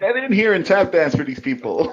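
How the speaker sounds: yelling, shouting. Calling a bard companion in from outside: yelling to someone outside. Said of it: "That's why I'm yelling".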